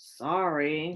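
very low, grudging grumble, "sorry" drawn out. Told by Miss Clark to apologize to Chloe, Max is grumbling. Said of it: "Max grumbled".

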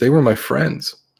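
high voice fading away unfinished. A boy in shock points down and speaks to the group, trailing off. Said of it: "he sort of trails off at that".

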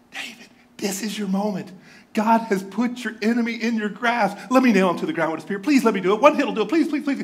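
put-on excited whisper. Retelling a soldier urging david to let him strike: acting out an excited whisper. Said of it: "Can you hear how excited he is?".

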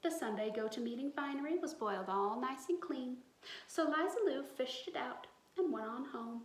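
plain

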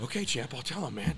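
mock frightened voice. Retelling his answer to a spitting, furious man, a retold scared reply. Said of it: "And I'm shaking".

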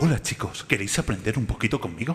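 Spanish movie dub voice. Demonstrating the typical voice used when dubbing american films into spanish, dubbing voice. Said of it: "Esta es la típica voz que ponemos en las películas americanas cuando las doblamos".

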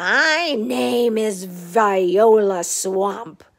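loud scratchy voice, drawn-out my. Narrator reading, the lady at the door speaks to the kids: scratchy Viola Swamp voice. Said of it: "said the lady in a scratchy voice".

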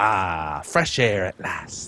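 very low, soft pirate storytelling voice. Speaker reads a line aloud to a companion, in a pirate voice. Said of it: "I'm not sure why I read it like a pirate".

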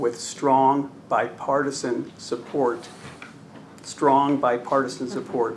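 slow, deliberate, each word separately emphasized. Addressing Mr. Chairman about a bill, announcing its support: saying it slowly. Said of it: "I'm going to say this slowly".

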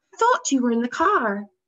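surprised, caught off guard. Reading a woman's line as she notices someone watching her, startled tone. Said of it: "she said in a startled tone of voice".

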